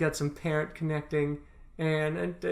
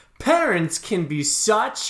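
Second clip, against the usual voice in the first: put-on movie trailer announcer voice, louder; 3 semitones higher, 5 dB louder than usual. Retelling a movie trailer: movie trailer voice. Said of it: "the trailer movie voice".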